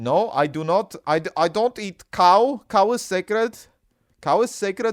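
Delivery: loud, high, laid-on put-on Indian English accent. Doing a run of accent bits, now in an Indian accent. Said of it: "That is more of an Indian accent now".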